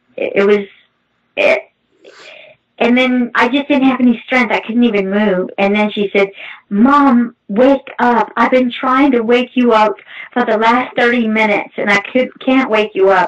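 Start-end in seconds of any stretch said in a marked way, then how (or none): none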